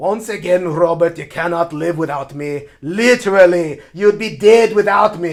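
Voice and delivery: put-on loud, weak Scottish accent. Playing a card game, the speaker voices the card's character: weak Scottish-accent Eddard impression. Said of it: "my Scottish accents are pretty weak".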